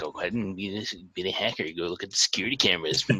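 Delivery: sarcastic muttering under breath. A tabletop player voices their character's remark as sarcastic muttering under their breath. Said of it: "super sarcastic like muttering under my breath".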